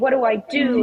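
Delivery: put-on, tearful, helpless sobbing voice. Retelling a coached seventeen-year-old's question, imitating someone crying. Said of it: "crying and".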